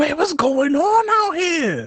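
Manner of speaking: high-pitched, slow, stunned disbelief. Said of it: "I'm over here like".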